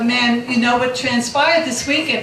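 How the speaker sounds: plain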